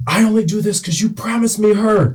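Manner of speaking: high-pitched mock yell kept low in volume.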